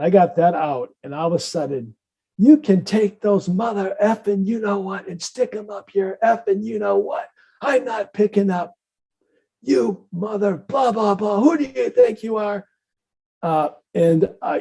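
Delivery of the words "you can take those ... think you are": play-acted cussing, heated, high-pitched ranting tirade. Retelling how a woman screamed at you, imitating someone screaming. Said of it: "she's screaming at me".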